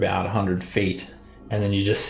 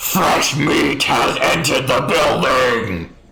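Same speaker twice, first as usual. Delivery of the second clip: very loud, pitched-up calling voice; 5 semitones higher, 7 dB louder than usual. Voicing Maharu calling out in Infernal, in a very loud voice. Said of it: "this very, very loud voice".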